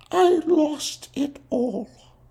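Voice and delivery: voice trailing off weakly. A woman answering questions, her voice trailing off weakly. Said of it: "her voice trailed off weakly".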